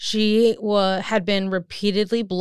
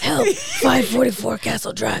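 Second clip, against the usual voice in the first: imitated whisper in a higher pitch; 3 semitones higher than usual. Retelling a caller's emergency call to the others, imitating a whispered call. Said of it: "We need the voice".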